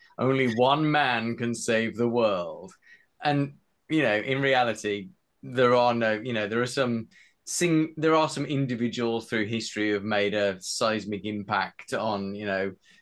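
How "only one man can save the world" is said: slow, epic movie trailer narrator voice. Discussing Bond stories with another speaker, briefly mimicking a trailer: movie trailer voice. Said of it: "I'm almost going into trailer voice here".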